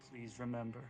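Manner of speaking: soft, low, gentle, kind voice. Thinking out a last message as the last bits leave, gentle, kind voice. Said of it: "in the most gentle, kind voice that I can".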